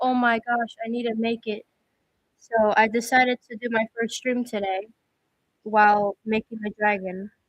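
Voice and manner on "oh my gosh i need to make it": acted panicked voice. Retelling forgetting a christmas special: imitating own past panic. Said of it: "I was just, like, freaking out".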